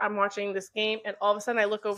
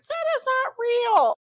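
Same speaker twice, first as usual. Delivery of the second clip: put-on kids' voices, very high in pitch, drawn out slowly. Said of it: "a bunch of them went".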